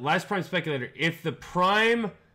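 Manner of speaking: usual speaking voice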